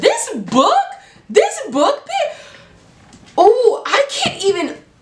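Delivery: very high, overexcited gushing, swooping and drawn out. Starting to talk about a book just read, overexcited. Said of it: "let me calm down".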